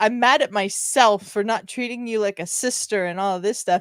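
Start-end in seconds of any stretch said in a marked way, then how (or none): none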